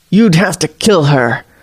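jaw clenched tight, speaking through clenched teeth. Narrator reading the warlock's line, spoken through clenched teeth. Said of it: "the warlock speaks through clenched teeth".

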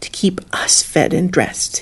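whispered, half-swallowed mutter under the breath. A woman mutters back at the man gripping her jaw: muttering. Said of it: "she muttered".

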